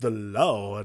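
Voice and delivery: put-on Southern accent. Retelling a movie character's entrance line: imitating a Southern accent. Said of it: "it almost is Southern".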